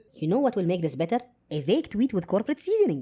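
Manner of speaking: fast, breezy, smug mock corporate CEO voice.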